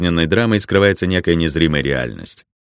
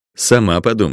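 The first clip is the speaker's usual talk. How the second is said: plain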